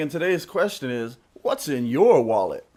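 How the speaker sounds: TV commercial announcer delivery. Radio show host announces today's listener question, just like the TV commercial. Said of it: "you say that just like the commercial".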